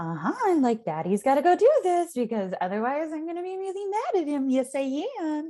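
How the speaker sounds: put-on lilting, sing-song baby talk. Showing how to talk to a baby while frustrated with a partner: sing-song voice. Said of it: "with the sing-song voice".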